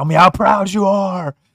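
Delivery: pretend shouting. Pretending to yell a movie line at the boss: mock yelling. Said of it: "I'm just gonna yell at him".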